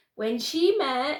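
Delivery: plain reading voice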